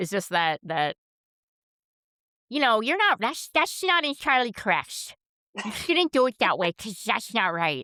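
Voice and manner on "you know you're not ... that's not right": snooty, nasal, pompous know-it-all voice, pitched up. Imitating someone correcting people: nasally pompous know-it-all voice. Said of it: "always a voice that I hear".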